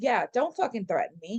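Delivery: ordinary delivery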